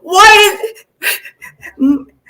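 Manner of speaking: high, loud, crying, distraught shout. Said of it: "crying, you know".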